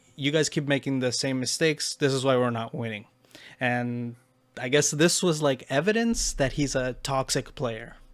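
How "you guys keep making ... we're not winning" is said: normal talking voice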